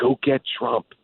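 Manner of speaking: mock whispered voice, slowed. A governor recounting a voter who leaned over to him: retelling a whisper. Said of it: "she leaned over and she whispered to me".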